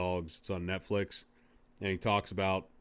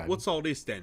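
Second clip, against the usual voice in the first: terrible fake British accent, pitched high; 9 semitones higher than usual. Imagining what they'd say to someone, putting on a bad British accent. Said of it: "My British accent's terrible".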